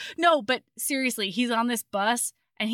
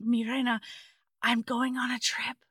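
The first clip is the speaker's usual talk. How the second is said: put-on whisper, quieter; 5 dB quieter than usual. Retelling how he says goodbye as he leaves: imitating a whisper. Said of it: "he whispers, like".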